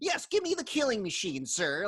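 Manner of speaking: put-on taunting tone. Retelling characters taunting Gunther while buying a gun: imitating a taunting tone. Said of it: "they're taunting Gunther".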